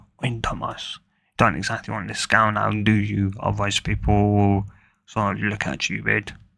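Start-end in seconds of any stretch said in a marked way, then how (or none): none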